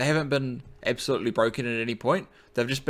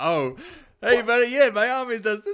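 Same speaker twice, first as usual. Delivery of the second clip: put-on cheerful voice, much higher pitch; 11 semitones higher than usual. Retelling games with their army, the speaker plays their past self greeting an opponent, mock-cheerful. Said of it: "trying to be all cheerful".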